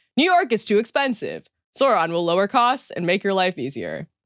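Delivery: ordinary delivery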